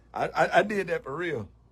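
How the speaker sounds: ordinary talk, nothing marked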